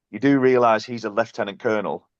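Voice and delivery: ordinary talk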